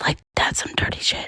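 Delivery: quiet whispering. Talking to another speaker, worried others will hear: whispering. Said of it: "If you don't quit whispering".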